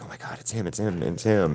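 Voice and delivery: excited hushed whisper, barely voiced. Retelling how a woman whispered to her coworker on recognizing him, imitating her whispering. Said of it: "she's all like whispering to her coworker".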